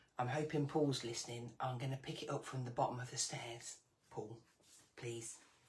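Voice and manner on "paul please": hushed call, quieter. Calling down the stairs without waking the dog: calling out quietly. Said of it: "I've gotta do it quietly".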